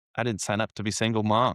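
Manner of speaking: ordinary delivery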